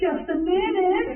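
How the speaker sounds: sugary, sweet, very high little voice. Retelling a housekeeping prank, quoting the woman's reply: imitating her sweet voice. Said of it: "And her sweet voice".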